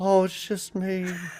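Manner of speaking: put-on soft-spoken Southern accent. Discussing actors' Southern accents, the speaker does a soft-spoken Eric Stoltz impression. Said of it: "it's so soft spoken".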